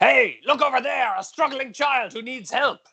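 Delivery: very high, loud, all-out earnest, convinced yell. Speaker demonstrates what they would yell, yelling with total conviction. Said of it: "yell with all the conviction in my voice".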